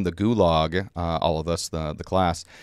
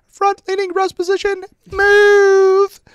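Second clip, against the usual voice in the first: put-on shrill, very high, loud little girl yell; 10 dB louder than usual. Retelling how a little girl yelled an order at the group: imitating a little girl's high-pitched yell. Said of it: "with a little girl, high pitched voice, she yelled out".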